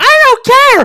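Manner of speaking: put-on spoiled bratty-kid outburst, very high, shrill and loud. Acting out a character refusing a birthday toy car: imitating a bratty kid. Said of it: "he's like one of those bratty kids".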